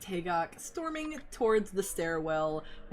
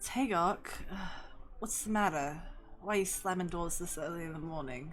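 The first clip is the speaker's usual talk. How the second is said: worn-out, weary, very tired voice, soft and quick; 5 dB quieter than usual. Hearing doors slam early, Clement calls after Tagok in the hallway: Clement, very tired. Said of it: "very tiredly just says".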